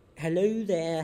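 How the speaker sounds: badly attempted Scottish accent. Imagining the Loch Ness monster saying hi to visitors, bad Nessie Scottish accent. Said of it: "I can't do a Scottish accent".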